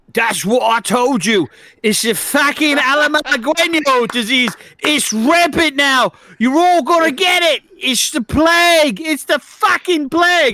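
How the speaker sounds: mock top-of-the-lungs scream. A player at a game table shouts in character to the room, screaming at the top of lungs. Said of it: "And I screamed at top of my lungs".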